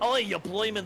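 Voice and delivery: high put-on Scottish accent sliding toward Australian. Showing how his Scottish and Australian accents blend: Scottish accent blending into Australian. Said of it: "my Scottish and my Australian tend to blend together".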